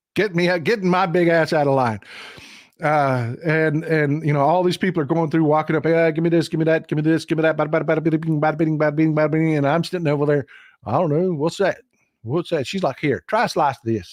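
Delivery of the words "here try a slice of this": put-on Southern hillbilly voice, much lower pitch. Retelling a woman offering a slice, the speaker imitates Southern hillbilly talk. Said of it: "she went into Southern hillbilly mode".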